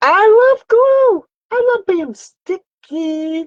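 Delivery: playful, very high, loud put-on voice.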